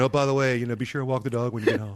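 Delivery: nagging mom voice, as if from afar. Retelling mom's reminder heard during the school day: imitating mom's nagging voice. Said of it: "my mom's voice in my head saying".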